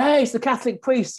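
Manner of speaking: shrill, very high shout, as if from a distance. Retelling how a local guy called out from across the road: imitating someone shouting. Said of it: "And he shouted".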